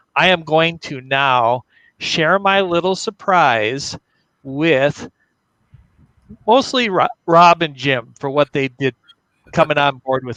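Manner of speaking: choked-up voice, thick with feeling. Sharing a surprise with two collaborators for coming on board, choked up. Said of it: "I'm all choked up here".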